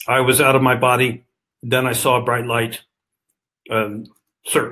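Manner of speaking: put-on terse, level, clipped pilot-style monotone. Interviewer retelling pilots' experiences the way they tell them, in a clipped monotone. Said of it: "in sort of the clipped monotone".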